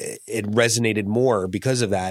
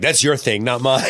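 usual speaking voice

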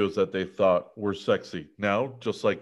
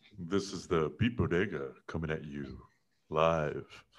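put-on seductive voice, lower and quieter; 5 semitones lower, 8 dB quieter than usual. Introducing the episode as host: sexy voice. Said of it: "do I need to put a sexy voice on?".

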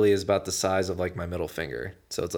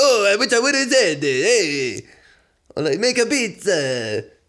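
put-on very high, loud, botched elderly Italian accent; 13 semitones higher, 8 dB louder than usual. Imitating the co-host after a podcast ends: failed old Italian man accent. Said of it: "I clearly can't do an 80-year-old Italian man's accent".

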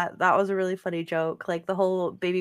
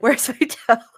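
high, loud screaming; 5 semitones higher, 8 dB louder than usual. Picturing a character waking up in chaos, pretend screaming.

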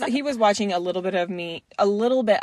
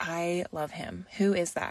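slow, hushed, confiding whisper; 3 semitones lower, 9 dB quieter than usual. Retelling what a friend said while eating in a theater: imitating a friend whispering. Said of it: "she whispers over to me".

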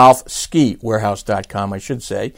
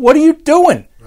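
very high, shrill, raised yell; 6 dB louder than usual. Retelling yelling at the television while watching golf: retelling a yell at the tv. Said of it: "I was even yelling at the television".

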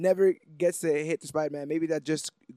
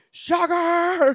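mock screaming, much higher and louder; 8 dB louder than usual. Recounting a fight scene, the speaker acts out a character retelling a scream. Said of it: "starts screaming".

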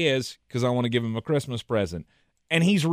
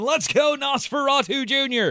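very high, stadium-style cheering yell; 10 semitones higher than usual. Answering a joke about a fan caught mid-yell: imitating a fan yelling. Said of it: "He was yelling".

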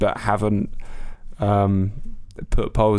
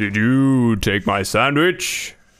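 put-on heroic god voice. Playing a questions game, walking in on a sandwich: Thor accent. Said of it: "gonna go for the Thor, uh, a-, accent".

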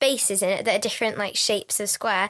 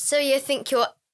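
normal talking voice

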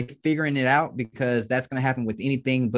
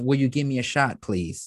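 imitated pleading, begging tone. Retelling how own phone calls sounded before, imitating own pleading tone. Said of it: "not that tone of".

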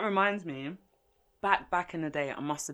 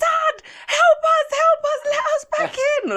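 acted, very high, very loud tearful pleading; 13 dB louder than usual. Retelling banging on a door as children, imitating a crying plea for help.

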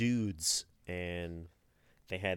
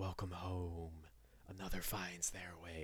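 strange collective voice, many speaking as one; 11 dB quieter than usual. Retelling lines of a campaign antagonist: weird Eyes of Nine hive mind voice. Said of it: "this weird, like, hive mind thing".

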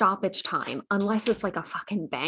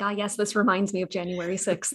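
usual speaking voice

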